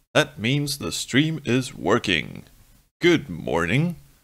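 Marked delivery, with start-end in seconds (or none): 3.1-4.0 radio announcer's on-air broadcaster voice. Greeting viewers at the start of a stream; radio announcer voice. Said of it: "I didn't realize I had my uh, radio announcer voice on".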